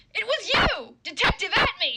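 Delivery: poorly delivered line. Trying out a dramatic scene line, with a terribly delivered accusation. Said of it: "that was terrible. That delivery was fucking horrible".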